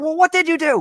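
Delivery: very high, loud, shrieking scream. Retelling a phone call where mom complains about the ferns: imitating mom screaming. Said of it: "starts, like, screaming".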